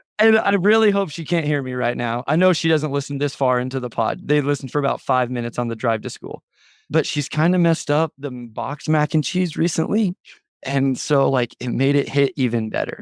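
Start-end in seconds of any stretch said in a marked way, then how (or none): 6.9-13.1 slow, secretive stage whisper. Speaker on a podcast, hoping she can't overhear, half-whispering. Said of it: "See how I'm whispering right now".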